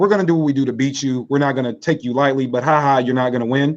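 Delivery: ordinary talk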